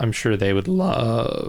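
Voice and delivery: voice breaking up, cracking mid-sentence. Talking about game prices, the speaker's voice cracks: voice crack. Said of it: "Whoa, voice crack".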